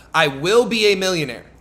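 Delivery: ordinary delivery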